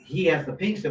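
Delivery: normal talking voice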